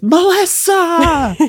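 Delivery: very high, shrill, full-throated scream at top of lungs. Recalling a favourite moment, imitating Jennifer Tilly screaming a name. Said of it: "Just at the top of her lungs".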